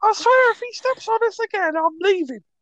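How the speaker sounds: high pitch with a lilting Liverpool accent. Imagining hearing a bunch of ants talking, in a Liverpool-ish ant voice. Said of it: "Liverpoolian as well, then".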